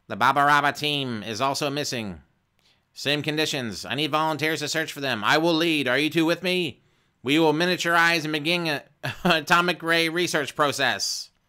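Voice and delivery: loud, high, scratchy mechanical robot voice. Reading a choose-your-own-adventure book aloud, voicing the robot: scratchy mechanical robot voice. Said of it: "the robot continues speaking in a scratchy mechanical voice".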